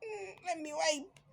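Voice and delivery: soft, high, slow fake crying whimper. Mocking someone's crocodile tears, the speaker shows how easily crying is faked: fake crying. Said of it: "I can pretend I'm crying".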